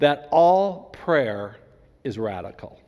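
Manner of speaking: very slow, careful delivery, each word weighed. Speaker making a key point to listeners, speaking very slowly. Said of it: "I'm speaking very slowly".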